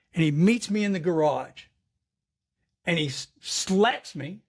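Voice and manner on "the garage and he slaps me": normal talking voice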